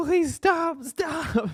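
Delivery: acted-out yelling, pitched way up. Retelling hearing static on a headset and yelling at them: imitating own yelling. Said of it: "and just yelling at them, like".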